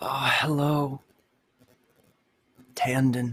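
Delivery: hushed close whisper. Voicing a creature that whispers in a player's ear: whispering in the ear. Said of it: "you hear a whisper in your ear".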